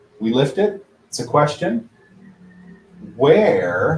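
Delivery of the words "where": stretched-out 'where'. Teaching how to speak a question out loud, a stretched-out 'Where'. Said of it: "stretch it out".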